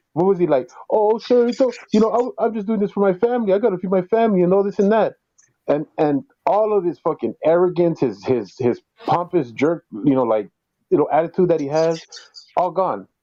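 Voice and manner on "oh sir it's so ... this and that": mock tearful, babyish, high-pitched blubbering. Imitating a man caught by a cop: imitating someone crying like a baby. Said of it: "crying like a little baby".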